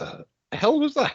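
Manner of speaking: high, stunned, incredulous blurt. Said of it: "Agnar's kind of staring at this going".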